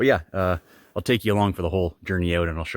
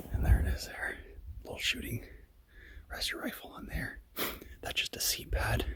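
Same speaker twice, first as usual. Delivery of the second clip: hushed, very soft, very quiet whisper; 4 semitones higher, 11 dB quieter than usual. Showing the listener a shooting rest outside before leaving, whispering. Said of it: "I don't know why I'm whispering".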